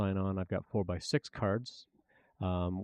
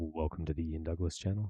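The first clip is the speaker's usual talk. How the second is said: gentle, calm, soothing host voice; 3 semitones lower, 4 dB quieter than usual. Welcoming viewers to the channel in a soothing voice. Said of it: "I got that soothing voice".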